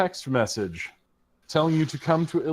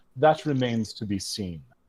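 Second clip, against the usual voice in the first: put-on Caribbean accent; 4 semitones lower than usual. Speaker voices a woman's reply to a man in the story, Caribbean accent. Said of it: "she speaks with a, a Caribbean accent".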